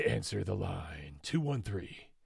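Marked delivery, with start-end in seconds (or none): 1.2-2.0 put-on radio announcer guy voice. Call-in show host calling out the next caller's area code, announcer guy voice. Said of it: "That's my announcer guy voice".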